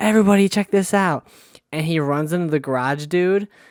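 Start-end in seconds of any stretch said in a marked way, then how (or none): 0.0-1.3 put-on yelling, high and loud screaming. Retelling how the party host called everyone over: imitating Sal screaming. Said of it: "He's screaming".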